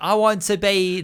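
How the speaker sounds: bad Texan accent slipping British, very slow, high. Mimic the actor's accent in Knives Out, as a bad Daniel Craig Texan accent, sounding British. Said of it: "that's British".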